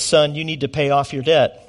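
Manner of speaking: plain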